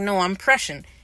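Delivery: ordinary delivery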